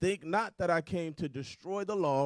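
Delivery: normal talking voice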